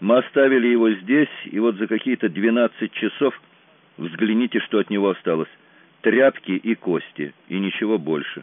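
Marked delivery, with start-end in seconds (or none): none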